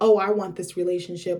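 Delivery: ordinary talk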